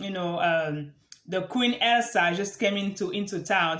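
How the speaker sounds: ordinary talk, nothing marked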